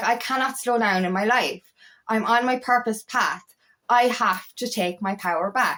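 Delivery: normal talking voice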